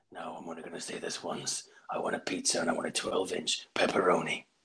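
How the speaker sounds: action-movie menacing film-style delivery voice. Imagining a famous actor ordering a pizza: Liam Neeson impression. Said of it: "imagine Liam Neeson ordering a pizza".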